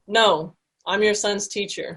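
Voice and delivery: slow, very calm voice.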